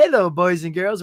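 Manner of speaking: sweet, friendly, nice-guy tone. Retelling a sketch's opening greeting: imitating Mister Robinson talking all nice. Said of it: "he's talking all nice".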